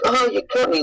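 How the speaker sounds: put-on, very high-pitched, casual, unbothered brush-off. Retelling being cut by a costume wing wire, imitating playing it off. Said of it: "really playing off".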